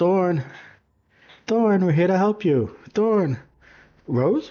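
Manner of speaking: very high, disguised dad voice, calling yell. Player's changeling disguising voice to call to two kids, yelling in a dad-like voice. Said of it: "I yell out".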